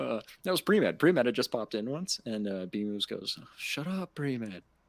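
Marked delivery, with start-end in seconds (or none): 3.6-4.6 put-on soft Australian accent, quieter. Retelling what someone said to another caller: imitating a quiet Australian accent. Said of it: "In some fucking quiet Australian accent".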